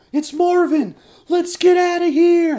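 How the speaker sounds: shrill, very high, very loud terrified cry. Reading a script line aloud for the character Will, terrified. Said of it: "terrified ... Like he's freaking out".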